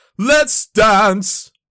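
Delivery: screaming, high pitched and loud. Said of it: "it just says that in [name]'s voice".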